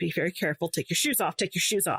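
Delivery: mock hushed tone, imitated quiet voice. Retelling how a woman walking with her met her, retelling a hushed warning. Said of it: "she's like in a hushed tone".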